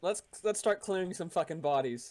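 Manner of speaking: normal talking voice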